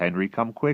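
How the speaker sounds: ordinary delivery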